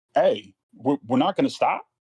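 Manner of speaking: high, swinging, called-out yell. Retelling calling out from a car passing a crash: retelling a yell. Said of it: "I literally yell out".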